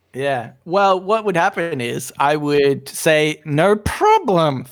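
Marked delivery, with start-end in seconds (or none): 3.5-4.7 mock politeness spoken through gritted teeth. Acting out a reply to a request for more orange juice: mock reply through gritted teeth. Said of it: "through gritted teeth".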